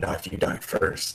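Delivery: low, soft mutter under the breath. Answering a threat in character, muttered under breath. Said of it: "under my breath".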